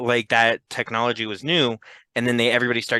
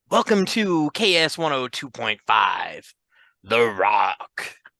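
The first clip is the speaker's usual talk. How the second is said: put-on radio announcer voice, very slow, drawn out. Imitating the shock jock guy type, put-on shock jock radio voice. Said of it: "there's that shock jock guy type".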